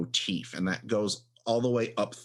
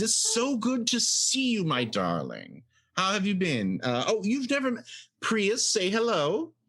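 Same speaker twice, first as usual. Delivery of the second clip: very high sing-song voice swooping way up; 11 semitones higher than usual. Voicing Verge greeting Jack with a hug and kiss: voicing Verge. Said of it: "a kiss on the cheek and says".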